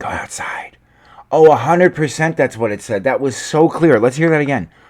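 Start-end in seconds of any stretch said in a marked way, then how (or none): 0.0-0.8 put-on little boy's whisper. Repeating the whisper heard in a clip: imitating a little boy whispering. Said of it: "Like a little boy saying".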